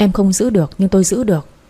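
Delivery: ordinary delivery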